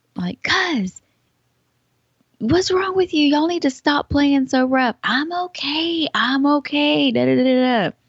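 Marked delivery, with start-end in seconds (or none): 2.4-5.0 put-on shout, much higher, faster. Retelling yelling across the mom's yard at kids playing rough, retelling a yell across the yard. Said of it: "I'm yelling across my mom's yard".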